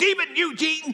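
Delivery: put-on very high hollering yell. Retelling how Mom yelled up the stairs: imitating mom yelling. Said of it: "she would yell up the stairs".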